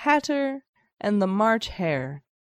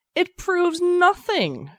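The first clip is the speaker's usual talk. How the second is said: very high, shrill shouted outburst; 9 semitones higher, 4 dB louder than usual. At a trial, a girl answers the queen, shouted. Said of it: "shouted Alice".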